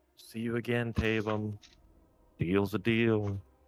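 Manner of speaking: voice carried on the wind. Narrating a tabletop game, speaker voices what the player hears: voice on the wind. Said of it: "a voice on the wind that's like".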